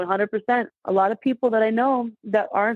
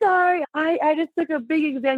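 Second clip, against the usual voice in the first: mock tearful, high, apologetic pleading voice; 6 semitones higher than usual. Retelling answering a police officer who pulled her over, imitating own teary voice. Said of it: "I'm tears in my eyes".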